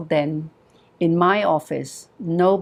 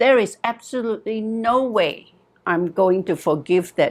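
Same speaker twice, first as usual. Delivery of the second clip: put-on angry woman voice, higher; 5 semitones higher than usual. Retelling what a client said about her father: imitating an angry woman. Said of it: "she was angry. She was very angry".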